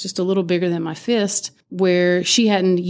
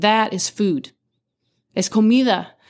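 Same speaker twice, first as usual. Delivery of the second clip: put-on stern scolding tone; 3 semitones higher than usual. Retelling how a coworker scolded about wasting dough: imitating a stern scolding. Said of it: "very sternly said".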